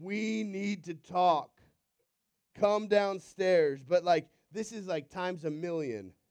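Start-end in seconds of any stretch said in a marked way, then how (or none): 0.0-3.8 put-on stern dad voice, slower. Picturing a dad downstairs calling up to a kid, imitating a dad's sternest voice. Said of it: "your dad in his sternest voice says".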